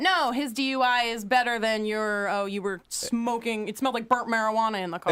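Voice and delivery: normal talking voice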